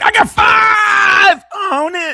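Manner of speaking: very high, very slow, cracking yell. Retelling what Hitman said, the speaker's voice cracks. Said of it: "My voice cracked".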